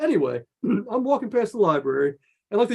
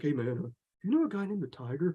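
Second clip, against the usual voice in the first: put-on jittery, on-edge, nervous, uneasy voice; 3 semitones lower, 10 dB quieter than usual. Retelling how a schoolmate from the story approached, imitating a schoolmate nervously. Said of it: "he's all nervous".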